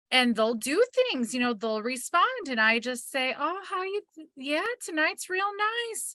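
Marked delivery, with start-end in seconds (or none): 3.3-6.1 cute, sweet, high put-on Southern accent. Retelling how a young man greets people sweet as pie, cute little southern accent. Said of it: "this cute little Southern accent".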